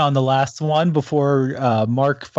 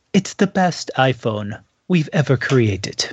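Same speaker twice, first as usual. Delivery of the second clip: awful, badly done put-on British accent. Discussing the iPhone 11, quoting Apple in a horrible British accent. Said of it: "let me do the horrible British accent".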